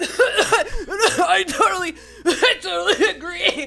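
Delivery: acted, strained speech forced through coughing, very slow. Mocking guests who speak while coughing: imitating talking through a cough. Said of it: "people talk through coughing after hitting their pipe".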